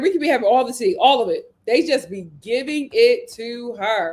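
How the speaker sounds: normal talking voice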